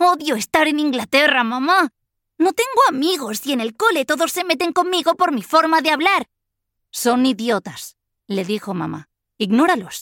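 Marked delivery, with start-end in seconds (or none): 0.0-6.3 very high, shrill, yelled outburst. Kizba goes on at her mother, shouting. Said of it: "Gritó".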